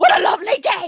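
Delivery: imitated, put-on shouting. Recalling high school theater with friends, imitating a shout. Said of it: "it's just everybody shouting".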